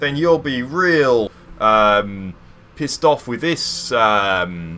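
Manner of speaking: put-on thick, overdone Australian accent. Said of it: "no more offensive Australian accents".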